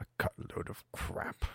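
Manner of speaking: quiet self-directed mutter. Speaker recalls hearing a question about the beanstalk: retelling a mutter. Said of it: "I muttered to myself".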